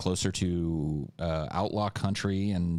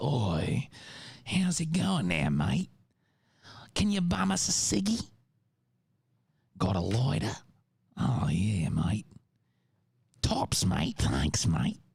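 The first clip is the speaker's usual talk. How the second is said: dopey, swooping put-on Australian male accent; 4 semitones higher than usual. Showing an accent character they created, the speaker uses a put-on Australian accent. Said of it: "my stupid Australian guy".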